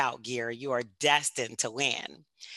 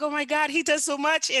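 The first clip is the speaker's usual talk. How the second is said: mock overjoyed, thrilled, excited outburst; 14 semitones higher, 3 dB louder than usual. Retelling how the wife reacted to the recognition: imitating Jemima sounding elated. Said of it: "She was so elated".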